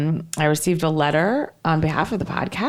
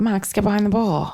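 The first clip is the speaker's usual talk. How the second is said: normal talking voice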